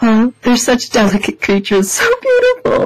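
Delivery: acted-out, very high, choked-up, teary, swooping gush. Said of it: "kinda tearing up".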